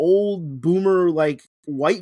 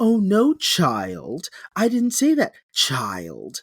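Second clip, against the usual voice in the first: exaggerated, campy voice with a clearly mocking tone. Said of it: "call someone child in the gayest voice he can".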